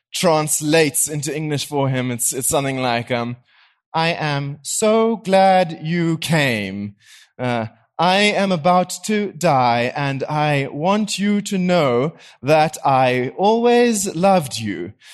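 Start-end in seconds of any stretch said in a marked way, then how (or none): 3.1-14.9 slow, flat, almost computerized voice. Describing a film scene, voicing the English translation in an almost computerized voice. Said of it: "this almost like computerized voice".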